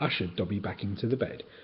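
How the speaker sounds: ordinary delivery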